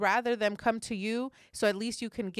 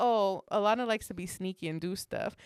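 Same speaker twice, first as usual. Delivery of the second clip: ordinary talk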